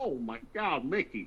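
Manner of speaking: goofy cartoon dog character voice. Asked for an impression, the speaker does their best Goofy voice. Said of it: "I could do a pretty good goofy one".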